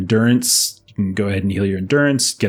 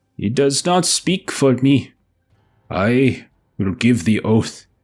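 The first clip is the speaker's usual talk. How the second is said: put-on feeble, weak, frail old man's voice; 3 semitones higher than usual. Voicing an old man stepping forward to give his oath: frail voice. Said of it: "a frail voice".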